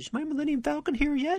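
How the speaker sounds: put-on very high, sad, pleading little child voice. Retelling asking at the catalog store every few days: imitating own sad childhood self. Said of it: "with a little sad look on my face and said".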